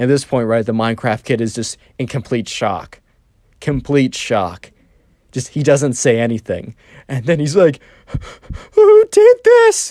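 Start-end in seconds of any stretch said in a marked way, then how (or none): 8.7-9.9 very high, raised, tearful crying whimper with rage. Narrating a Minecraft story, voicing the shocked kid: imitating a crying whimper. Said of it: "a crying, whimpery voice".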